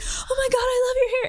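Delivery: put-on squealing shriek, very high-pitched. Retelling a fan at a drive-through window: imitating a high-pitched scream. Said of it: "literally screamed, like, high-pitched".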